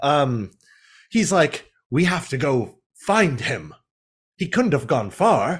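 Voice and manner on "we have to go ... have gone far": put-on British accent. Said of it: "sorry, uh, British".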